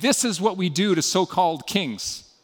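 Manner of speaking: normal talking voice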